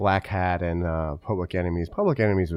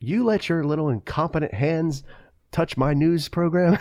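play-acted very high, angry yelling tirade; 10 semitones higher, 4 dB louder than usual. Recalling a film scene where a man yells at a lawyer, mock-angry yelling. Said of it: "he's like yelling at the lawyer".

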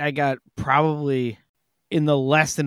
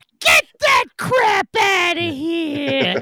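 very high, slow referee voice, "here" stretched out; 4 dB louder than usual. Retelling mocking a loud diner at dinner: Dana Carvey referee voice. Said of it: "she sounds like Dana Carvey and Little Nicky when he's the basketball referee".

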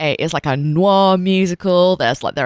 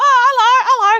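put-on little boy voice, much higher; 4 dB louder than usual. Recalling how someone normally spoke, imitating a little 10-year-old boy's voice. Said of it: "like a little 10-year-old boy's voice".

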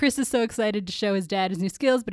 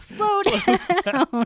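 mock yelling, higher and louder; 8 semitones higher, 4 dB louder than usual. Retelling a film scene where a boy in a wheelchair rolls downhill: imitating someone yelling. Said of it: "Chris starts yelling".

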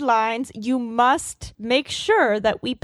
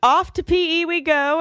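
announcer-like delivery; 4 semitones higher than usual. Imagining scurrying along to PE and announcing it: loud announcement. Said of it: "say so loudly, like".

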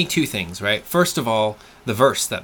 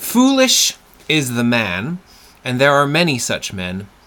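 slow, deliberate, measured reading aloud. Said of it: "So read it to us".

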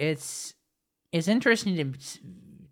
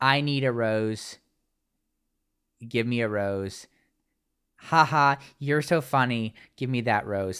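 shameless, showy, fake flirty voice; 3 semitones lower than usual. Retelling how a contestant cozied up to Will for a rose: imitating Mercedes' blatant fake flirting. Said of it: "That was the most blatant".

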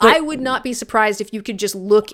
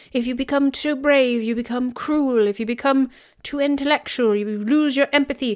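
put-on nature documentary narrator voice, pitched higher; 4 semitones higher than usual. Retelling what a video explained about the future: David Attenborough voice. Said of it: "I'm kinda like a David Attenborough".

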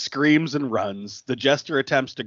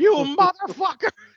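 raised voice, higher pitch. Retelling a movie scene where a killer leaves the locker room: imitating someone yelling. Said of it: "proceeds to yell".

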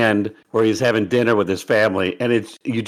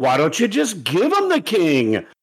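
condescending sarcasm, high and swooping; 7 semitones higher than usual. Describing a coach's sarcasm, the speaker does mock condescending sarcasm. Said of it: "condescending, sarcastic tone".

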